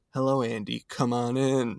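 silly, goofy monster creature voice. Reviewing an episode, imitating how the glowing-eyed monster talks: goofy monster voice. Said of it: "It's got such a goofy voice".

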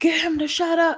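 play-acted, shrill, very high screaming outburst. Recalling the speaker's dad reacting to a crying baby brother; retelling dad's scream. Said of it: "my dad's screaming like".

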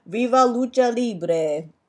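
loud, high, put-on Italian accent. Describing beer labels with another speaker, naming a mexican lager in an italian accent. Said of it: "I said it like in Italian".

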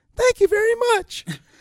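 small, little voice, very high and loud. Speaker recalling a contest winner speaking after his mandolin tune, young Chris Thile's little voice. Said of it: "you hear this little small voice go".

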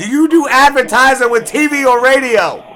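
very loud, high, angry yelling.

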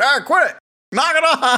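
mock yelling, very high-pitched. Retelling how a bedridden mom yelled at kids lighting fires: imitating someone yelling. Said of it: "you could just hear her yelling".

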